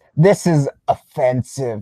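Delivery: loud, slow reading, every word punched. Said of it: "in all caps".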